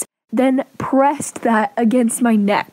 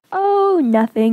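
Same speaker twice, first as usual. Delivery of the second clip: mock, heavily sarcastic, dismissive brush-off tone; 3 semitones higher than usual. Retelling what the mother said about the mark: imitating sarcastic tone. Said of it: "in a very sarcastic way".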